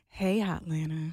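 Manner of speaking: sultry, sexy voice. Redoing the ad opening on the spot when asked: sexy voice. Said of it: "grown and sexy [name]".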